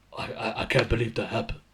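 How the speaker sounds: thick, dumb, stammering meathead voice. Speaker mimics how a show's voiceover makes people sound, dumb-sounding voiceover voice. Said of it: "they make them sound bad dumb like this".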